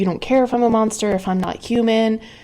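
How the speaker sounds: mock agitated, upset, worked-up outburst. Retelling a character's upset complaint: imitating someone upset.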